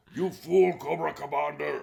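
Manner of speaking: very loud, rough bellow in a Scottish brogue. Retelling a cartoon scene, quoting Destro: Destro voice. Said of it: "which is why Destro always talks like this".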